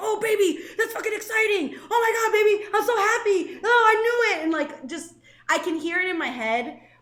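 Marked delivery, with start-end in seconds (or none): 0.0-4.4 very high, loud, gushing, super enthusiastic voice. Imitating a late dad reacting to good news: imitating a super enthusiastic voice. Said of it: "hearing his super enthusiastic voice".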